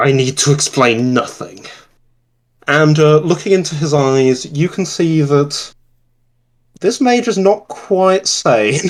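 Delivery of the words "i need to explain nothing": growling through the whole line. A mage advancing toward you refuses to explain himself, growling. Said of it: "He he growls".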